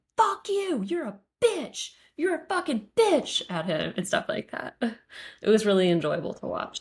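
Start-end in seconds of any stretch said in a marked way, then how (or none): 0.2-3.5 high-pitched screaming. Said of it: "like, screaming".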